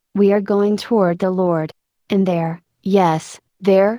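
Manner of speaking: ordinary delivery, nothing marked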